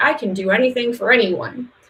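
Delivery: ordinary delivery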